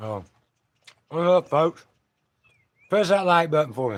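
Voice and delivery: talking with mouth full. Greeting viewers on a video, talking with a mouthful of M and M's. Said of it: "I got a mouthful of M and M's".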